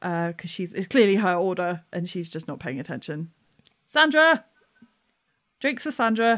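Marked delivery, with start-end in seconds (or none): 3.9-6.4 loud shouting, higher pitch. Calling out a drink order for Sandra, Pine Marten shouting an order name.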